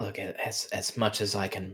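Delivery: hushed voice. Voicing a character whispering back an answer: whispering. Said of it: "She whispers back and says".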